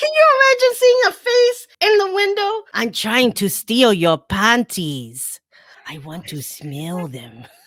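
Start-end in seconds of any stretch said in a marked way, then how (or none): 2.7-7.4 low, creepy, put-on Latin accent. Voicing the panty thief at the window in a bit, in a latin accent. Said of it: "I'm doing an, a, a Latin accent".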